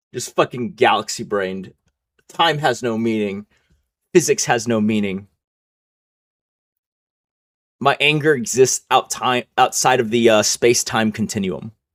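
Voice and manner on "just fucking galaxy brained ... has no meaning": ordinary delivery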